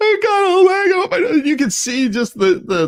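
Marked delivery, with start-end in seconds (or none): 0.0-1.5 mock very high bawling, sobbing little boy voice. Retelling a video of a little boy bawling: imitating a bawling little boy. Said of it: "He's just bawling his eyes out".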